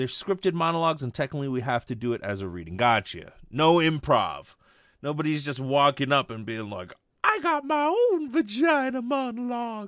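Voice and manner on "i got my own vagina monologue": put-on old man's voice, very high, drawn out. Joking about someone walking up with their own monologue: Family Guy old man voice. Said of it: "I don't know why I did that voice. That definitely sounded a lot like the old man from Family Guy".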